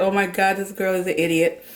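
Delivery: ordinary delivery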